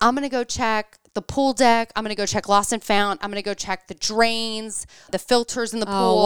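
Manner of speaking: normal talking voice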